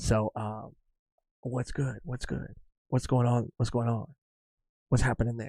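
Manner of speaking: soft, hushed, keep-it-down whisper. Speaker whispers to a listener imagined at a table with coworkers: whispering. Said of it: "that's why I'm whispering right now".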